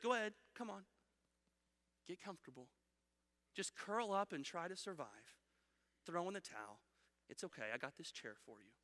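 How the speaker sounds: gentle soothing dragon voice. Describing what this beast says to us, in a soft soothing dragon voice. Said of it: "The soft and soothing voice of a deceptive dragon".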